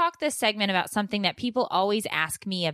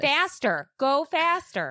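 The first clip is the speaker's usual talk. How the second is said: acted scream, higher; 7 semitones higher than usual. Retelling telling the kids to get out of the minivan, imitating own screaming. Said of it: "I'm screaming to the kids".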